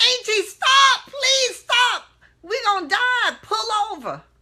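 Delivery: very high, loud, desperate, panicked shrieking. Recalling begging an aunt to pull over during a storm, retelling a scream. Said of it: "I remember screaming in my aunt".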